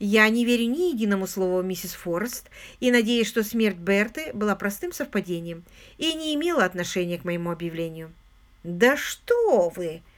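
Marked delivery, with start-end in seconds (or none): 8.6-10.0 biting, caustic, mocking sarcastic tone. A man pouring himself whisky replies to another speaker; sarcastic question. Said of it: "язвительно спросил Паркер".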